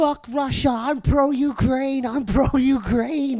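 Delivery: mock high-pitched, loud, drawn-out shouting. Retelling how a friend yelled at groups of people: imitating someone shouting.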